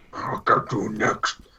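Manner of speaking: breathy, whispered villain voice. Answering a joke about being the Inspector Gadget villain: Dr. Claw voice. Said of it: "he sounds like he's got lung cancer".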